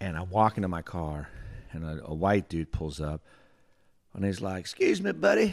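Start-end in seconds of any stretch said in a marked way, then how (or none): 4.6-5.5 put-on heavy, laid-on Southern accent. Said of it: "That dude's Southern accent".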